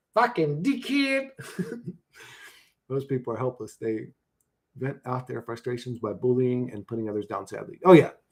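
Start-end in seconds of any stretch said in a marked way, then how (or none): 0.2-1.3 put-on Australian accent, voiced very high. Testing whether an insult sounds truly Australian: imitated Australian accent. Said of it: "does it sound like a real Australian?".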